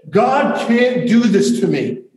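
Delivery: very high, hysterical, worked-up, drawn-out outburst. Retelling what a very worked-up woman said, retelling a hysterical outburst. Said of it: "In a hysterical voice".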